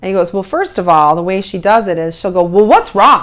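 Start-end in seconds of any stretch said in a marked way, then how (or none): 2.4-3.2 loud, put-on altered voice, angry-sounding. Acting out how she asks what's wrong: mock-angry high voice. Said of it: "her voice is automatically altered and it's high and it sounds angry".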